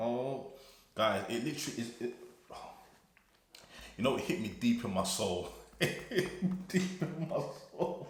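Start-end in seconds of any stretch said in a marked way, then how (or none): 5.8-8.1 high-pitched, laughing, overwhelmed gush.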